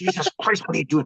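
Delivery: put-on angry father voice, through gritted teeth. Retelling how his dad reacted to finding him napping in the window: imitating his dad's angry outburst. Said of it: "Dad got so mad at me".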